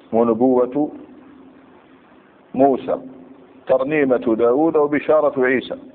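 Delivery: ordinary delivery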